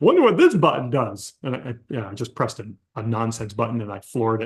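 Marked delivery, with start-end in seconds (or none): 0.0-1.3 silly, goofy, clowning put-on voice. Pulling out onto the street with a car full of kids, goofy voice. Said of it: "I just say in this goofy voice".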